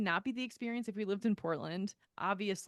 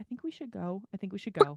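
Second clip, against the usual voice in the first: whispered; 4 dB louder than usual. Retelling what Tyler whispered at a neighbors' gathering: imitating Tyler whispering. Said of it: "he whispers to me".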